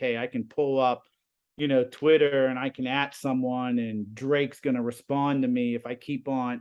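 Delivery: plain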